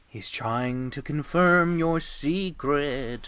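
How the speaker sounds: ghostly, haunting, eerie intonation. In an acted scene, answering the narrator's questions, in a spooky voice. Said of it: "spooky voices".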